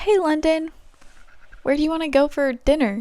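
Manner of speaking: deliberately high-pitched, casual voice. Speaker demonstrates a line in a high-pitched voice. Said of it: "like that high pitch".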